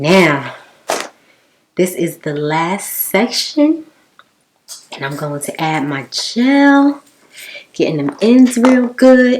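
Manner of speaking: upbeat excitement, swooping and rising, "gel" stretched out. Finishing the last section of her hair for her viewers, excited. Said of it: "Y'all hear the tone in my voice?".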